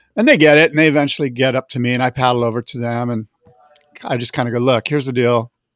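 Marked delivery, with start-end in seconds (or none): none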